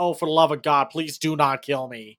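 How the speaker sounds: plain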